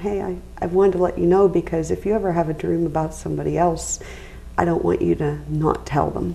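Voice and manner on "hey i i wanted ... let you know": plain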